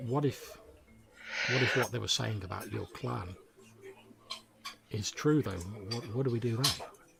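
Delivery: very quiet, hushed, confiding murmur. Narrating a character leaning in to ask, in a very low, quiet voice. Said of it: "in a very low, quiet voice says".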